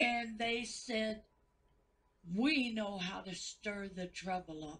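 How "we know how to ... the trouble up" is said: usual speaking voice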